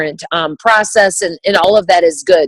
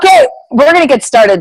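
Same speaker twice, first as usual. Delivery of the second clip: high-pitched, loud yell; 7 semitones higher, 4 dB louder than usual. Starting the evening's talk to the audience, yelling. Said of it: "Sorry, I'm yelling".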